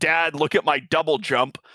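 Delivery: ordinary talk, nothing marked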